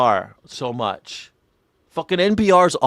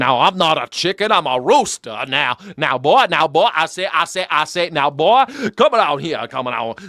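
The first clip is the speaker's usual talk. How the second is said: full put-on cartoon barnyard rooster voice; 2 semitones higher than usual. Speaker says someone talks like a famous turkey, then does Foghorn Leghorn voice. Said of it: "the dude talks like a famous turkey. Foghorn Leghorn".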